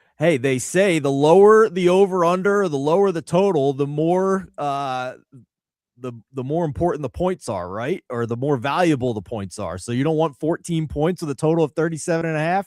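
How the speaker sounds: sarcastic, mocking tone.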